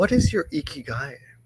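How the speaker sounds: put-on sneering, contemptuous, belittling tone. Retelling what a husband said to his wife: imitating a derogatory tone. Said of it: "really derogatory way".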